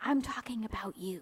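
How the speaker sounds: hushed stage whisper. Retelling a teacher singling out a student to the whole class, in a stage whisper. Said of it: "like a stage whisper".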